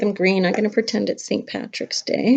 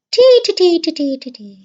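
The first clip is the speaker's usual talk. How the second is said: fake Irish lilt, very slow, swooping, each T drawn out; 7 semitones higher, 7 dB louder than usual. Speaker teaches a joke trick for sounding Irish, in joke Irish accent. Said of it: "if you want to sound Irish, you have to say the letter T five times, but you have to say it like this".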